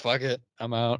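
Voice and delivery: ordinary delivery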